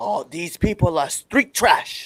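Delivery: high-pitched, drawn-out wrestler promo voice. Showing how a wrestler would cut a heel promo: Gunther impression. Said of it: "That's my impression of Gunther".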